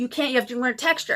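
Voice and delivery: put-on yelling. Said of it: "she's yelling at me".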